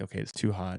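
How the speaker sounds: normal talking voice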